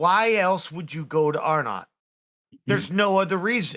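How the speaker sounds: slow, expressionless deadpan delivery. Your character looks at her and answers with a question, deadpan. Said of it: "I look at her deadpan like".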